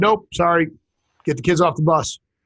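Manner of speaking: ordinary talk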